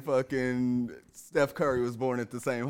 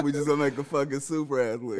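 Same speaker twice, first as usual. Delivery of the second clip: ordinary delivery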